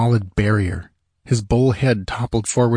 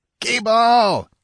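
shrill, high-pitched, desperate, terrified scream; 13 semitones higher than usual. A merchant calls out for his slave, screaming. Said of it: "he screamed".

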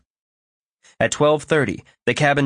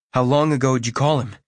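ordinary delivery, nothing marked

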